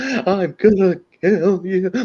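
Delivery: very high, very slow, stretched-out voice. Mocking an actor's odd line delivery in a bad movie: imitating Eddie Redmayne's voice. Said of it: "He's talking like this".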